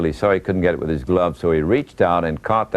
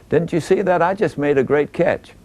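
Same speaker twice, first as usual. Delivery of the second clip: squeaky, very high-pitched voice; 11 semitones higher than usual. Retelling what a player said to his manager in the dugout, in a high, squeaky Willie Mays voice. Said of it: "in that high, squeaky voice".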